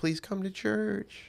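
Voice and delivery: put-on soft, high, very slow cute little kid voice. Imitating kids inviting someone to church: imitating a cute little kid voice. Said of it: "cute little voice".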